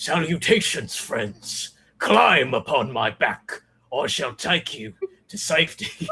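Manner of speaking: theatrical, stagey, swooping whale shark voice. Voicing a giant whale shark that offers the party a ride: theatrical whale shark voice. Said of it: "a telepathic voice calls out to you".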